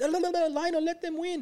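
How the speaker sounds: mock shrill, very high, slow drawn-out yell. Retelling a home video where a wife yells at her husband, retelling a wife's yell. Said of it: "she's yelling at him saying".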